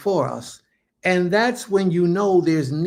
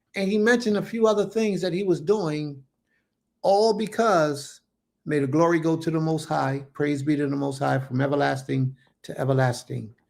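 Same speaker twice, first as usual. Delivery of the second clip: normal talking voice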